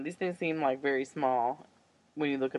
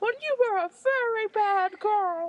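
very high, slow, tiny, silly put-on voice; 4 dB louder than usual. Joking about telling people about Saturday school when old: put-on weird little voice. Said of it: "That is a weird little voice".

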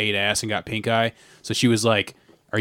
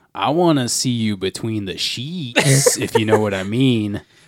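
play-acted, creepiest possible insinuating delivery. Speaker quotes Joey's line to Pola, creepy Joey impression. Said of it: "he says it in like the most creepy way possible".

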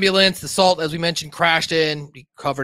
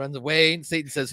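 usual speaking voice

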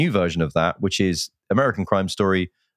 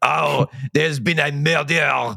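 put-on Belgian accent, pitched up; 7 semitones higher than usual. Talking about a whodunit film, imitate its lead announcing a murder, in a Kenneth Branagh as Poirot accent. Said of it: "Kenneth Branagh as Poirot doing this accent".

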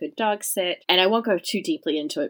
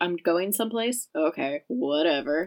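put-on, slow, laid-back, unbothered chill drawl. Imitating a very chill pet cat being taken on a trip: imitating Birdie the cat, chill. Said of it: "she's just so chill about it".

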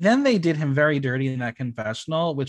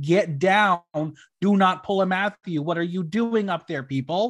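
mild, urgent, called-out voice; 5 semitones higher than usual. Retelling a scream at people climbing on rocks: imitating her own scream. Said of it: "and I screamed".

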